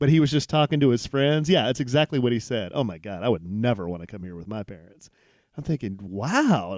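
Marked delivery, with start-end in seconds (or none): 2.7-5.1 put-on dry, low, quiet sarcastic teen voice. Repeating what a teenager said to his friends within earshot: mock-sarcastic retelling. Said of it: "say real sarcastically".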